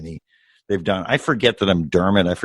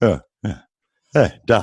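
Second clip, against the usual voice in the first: put-on booming voice. Imitating an actor's little sounds of agreement: imitating Warburton saying hey Doc. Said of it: "these little sounds of agreement".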